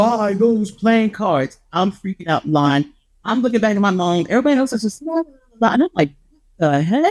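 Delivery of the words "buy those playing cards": slow, drawn-out overhead voice, every word deliberate. Retelling a voice heard overhead while standing in line: big booming voice. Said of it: "this big booming voice like over my head".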